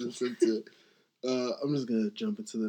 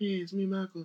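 put-on voice way up in squeaky falsetto; 9 semitones higher than usual. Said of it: "the super high pitch".

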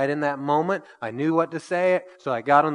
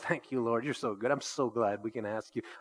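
very soft, hushed murmur under the breath; 4 semitones lower, 11 dB quieter than usual. Retelling a prayer said while fixing a jammed nail gun: imitating a half-whisper. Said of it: "saying this quietly under my breath".

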